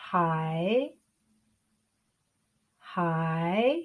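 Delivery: third tone on hai, falling then rising. Teaching the third tone in a video lesson, with a falling-rising tone. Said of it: "Can you hear me go down and up?".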